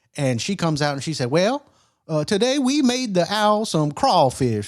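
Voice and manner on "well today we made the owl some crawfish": horrible, bad, high-pitched put-on Louisiana accent. Man quotes his wife's reply about the owl's food: Deborah in bad Louisiana accent. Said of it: "excuse my horrible Louisiana accent".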